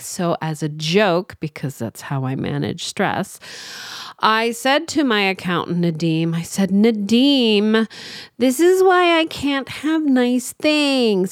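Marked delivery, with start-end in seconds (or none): 6.7-11.3 put-on, joking, high whiny gripe, name drawn out. Retelling a joking complaint to the accountant, nadim, retelling own whiny complaint. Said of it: "I was all whiny".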